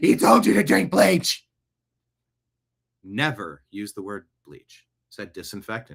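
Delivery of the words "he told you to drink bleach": overwrought, acted hyperventilating rant, high and loud. Imitating Trump critics ranting about bleach: imitating a hyperventilating critic. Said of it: "They'd hyperventilate".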